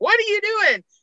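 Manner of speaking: acted-out, very high-pitched, shrill screaming outburst. Retelling shouting at the TV during a hockey game: retelling own screaming. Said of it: "I was screaming at my T V".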